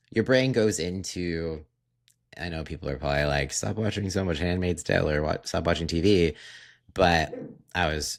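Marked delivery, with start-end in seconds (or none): none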